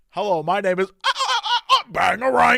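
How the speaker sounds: loud, halting, swooping, stuttering robot voice. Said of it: "do you think human being [name] is like".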